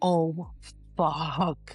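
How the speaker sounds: put-on frightened, scared, startled exclamation. Retelling a woman finding a bloody rose: imitating a scared woman. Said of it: "And she's scared now".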